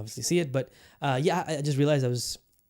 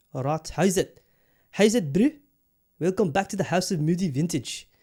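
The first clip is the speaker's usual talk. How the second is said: over-the-top, exaggerated, put-on South African accent; 4 semitones higher, 3 dB louder than usual. Welcoming viewers back to the show, in an exaggerated South African accent. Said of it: "apologize for the exaggerated South African accent".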